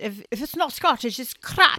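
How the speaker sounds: angry put-on Scottish accent. Retelling a comedy sketch's shop motto: imitating a venomous irate Scottish shopkeeper. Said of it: "But he's, like, like, venomous about it".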